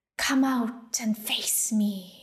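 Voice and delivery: serpentine, sibilant, hissing dragon voice. Reading a story aloud, the narrator voices a dragon challenging the others, hissing dragon voice. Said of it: "the dragon hissed".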